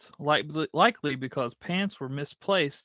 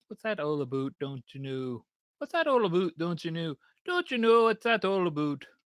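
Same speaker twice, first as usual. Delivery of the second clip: attempted Canadian accent; 3 semitones higher than usual. A speaker reading from cards tries out a canadian accent. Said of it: "how do a Canadian accent?".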